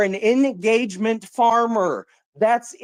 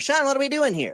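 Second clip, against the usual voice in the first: sarcastic, mocking, parroting tone; 4 semitones higher, 4 dB quieter than usual. Mocking the other speaker's repeated line during an argument: mocking imitation of the other speaker. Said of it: "every time I say something, it's".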